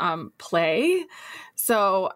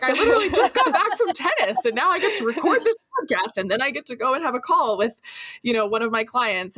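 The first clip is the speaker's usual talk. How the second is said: thrilled, delighted, bright, pitched-up voice; 5 semitones higher than usual. Imitating the other speaker talking about their free days: imitating someone sounding delighted. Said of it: "can hear it in your voice when you're like".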